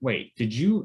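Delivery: ordinary delivery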